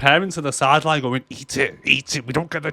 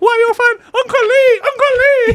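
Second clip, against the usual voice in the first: put-on eerie creepy little girl voice, very high, loud; 8 dB louder than usual. Talking about a creepy little girl, the speaker imitates her in a little girl's voice. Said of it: "It's the little girl".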